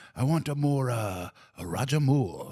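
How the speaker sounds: slow, put-on Japanese accent. Retelling a Japanese director directing an actor: put-on Japanese accent. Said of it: "now you're not the only one to do racist accents".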